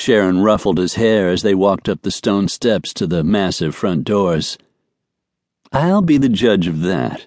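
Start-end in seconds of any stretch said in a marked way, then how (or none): 5.7-7.3 playful, gentle teasing. A woman to a companion as they walk up to the front doors, teasing. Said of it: "she teased".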